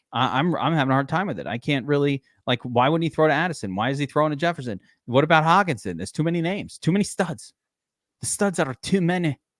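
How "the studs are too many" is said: movie-battle style epic-film Scottish accent. Talking about Dobbs, in a Braveheart Scottish accent. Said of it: "It's an Irish accent".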